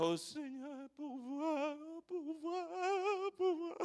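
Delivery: put-on pitiful small voice. Lecturing a listener, the speaker imitates them: mocking a pitiful little voice. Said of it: "tu ne reviendras pas avec ta petite voix".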